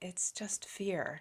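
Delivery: soft, hushed whisper under the breath. Retelling what was whispered while he stood looking out at the sea, a whisper. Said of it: "him whispering and go".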